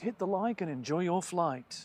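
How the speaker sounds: radio advert announcer voice. Trying out a new sign-off for the weekend show, in a radio advert voice. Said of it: "You're doing adverts".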